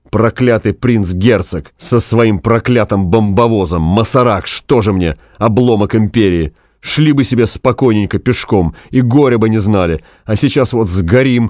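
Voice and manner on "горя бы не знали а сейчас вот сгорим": plain reading voice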